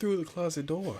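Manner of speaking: pleasant woman announcer voice. Suggesting a podcast intro, imitating a woman's voice. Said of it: "like a woman's voice saying".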